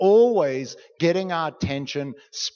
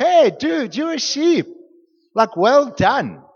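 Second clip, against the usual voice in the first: upbeat, sincere, high-pitched complimentary tone; 8 semitones higher, 7 dB louder than usual. Calling someone a sheep but meaning it well: said like a compliment. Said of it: "say it in like it's a good thing".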